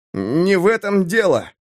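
high, quavering voice, suddenly unsteady and trembling. A narrator reads a character's outburst to a high mage, trembling voice. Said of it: "голос Песка вдруг задрожал".

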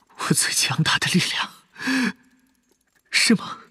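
quavering, trembling, breathy whispered voice. Reading a novel aloud, voicing a character's bitter reply: trembling voice. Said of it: "他声音颤抖".

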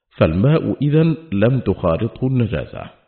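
ordinary delivery

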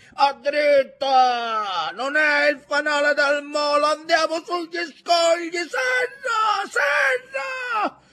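very high, loud yelling, rising throughout. In a night storm at sea, the boat's master yells to the crew, shouting over the storm. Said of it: "gridò padron Ntoni".

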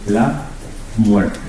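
la muerte calm, slow, every syllable articulated. Speaker shows how they like to pronounce it: calm, clearly articulated 'la muerte'. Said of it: "Me gusta pronunciarlo así, la muerte, con tranquilidad, vocalizando".

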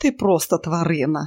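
usual speaking voice

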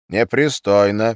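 dismissive, brushing-off tone. Ivan responds to a crude joke about him; dismissive tone. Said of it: "произнес Айвен пренебрежительно".

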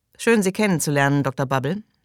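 plain reading voice

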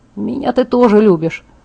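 ordinary talk

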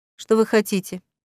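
ordinary delivery

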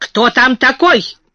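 angry, furious. Hearing loud sobbing from under a table, a woman asks, angry. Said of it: "гневно спросила она".

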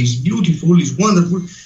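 ordinary talk

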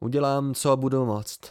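plain reading voice

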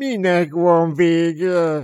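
high, whining, whiny voice with "vége" drawn out. A character questions the group in a conversation: whining. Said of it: "Nyafogott Méla Béla".

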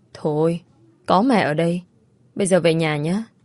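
ordinary delivery, nothing marked

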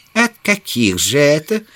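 caustic, sardonic. Summerlee asks Challenger which offers he always refuses; with a caustic smirk. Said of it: "с язвительной усмешкой осведомился Саммерли".

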